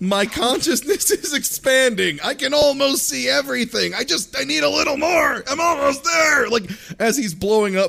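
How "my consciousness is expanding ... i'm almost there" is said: play-acted high-pitched yell, leaning in close. Retelling what a character yells while fighting: imitating someone yelling. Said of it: "He literally yells".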